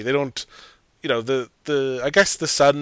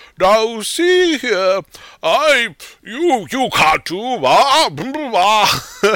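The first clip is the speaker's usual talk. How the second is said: put-on arrogant, pompous old-man bluster, very high, very slow; 10 semitones higher, 6 dB louder than usual. Retelling how a child character sounds doing his father's voice: imitating a pompous old man voice. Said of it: "the kid when he's doing his dad's voice".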